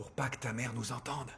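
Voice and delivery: hushed whisper. Answering the other speaker's question about why she is whispering, whispering. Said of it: "Pourquoi tu chuchotes?".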